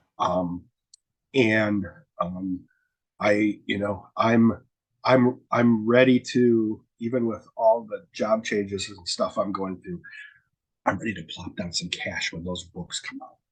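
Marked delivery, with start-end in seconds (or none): 7.0-13.3 low-key, soft, hushed voice close to the mic. Talking with a co-host about the next episode, speaking softly, near half-whisper. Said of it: "appreciate how you're whispering into the microphone".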